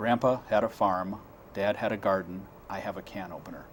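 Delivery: ordinary talk, nothing marked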